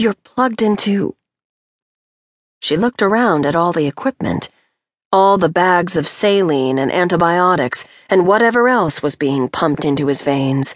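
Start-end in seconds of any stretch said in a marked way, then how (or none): 0.0-1.1 soft voice, higher pitch. A woman speaks to a man hooked up to an iv, soft voice. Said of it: "keeping her voice soft".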